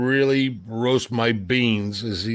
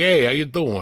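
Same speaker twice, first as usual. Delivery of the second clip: put-on New York accent; 2 semitones higher than usual. Friends chatting about accents, one showing off a New York accent. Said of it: "You can do like the getting New York".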